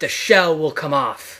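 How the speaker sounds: resounding, booming voice. New middle schooler recalling a voice heard out of nowhere, huge booming voice. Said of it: "I heard a huge booming voice go".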